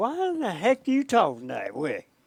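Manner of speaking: put-on Southern accent. Retelling what his southern boss said after calling him in, imitating a southern accent. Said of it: "he was a southern boy".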